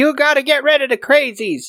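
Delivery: very high-pitched, shrill, acted screech. Retelling a movie scene where a farm mother screams: imitating Ethel screaming. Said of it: "she's screaming like".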